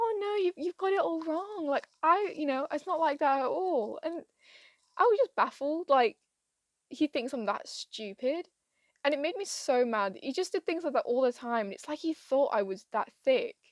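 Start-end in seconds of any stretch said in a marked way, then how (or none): 0.0-4.0 mock patronising, talking-down delivery, pitched up. Retelling how he said the speaker had it all wrong: imitating a condescending tone. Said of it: "proper say it to me very condescendingly".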